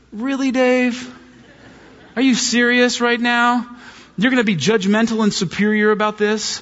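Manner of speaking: play-acted, mildly sarcastic, high-pitched needling tone. Telling friends what the Holy Spirit said to Dave, retelling a sarcastic remark. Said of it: "the Holy Spirit's ever a little bit sarcastic".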